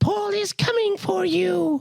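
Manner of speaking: very high, very drawn-out, slow, crazy-sounding weird voice. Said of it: "he has this really crazy voice".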